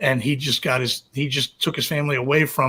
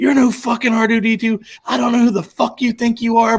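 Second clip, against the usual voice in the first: top-of-the-lungs, loud, high-pitched screaming; 9 semitones higher, 5 dB louder than usual. Retelling the time he screamed at a drink-serving robot: retelling screaming at a robot. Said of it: "I'm screaming at this fucking robot".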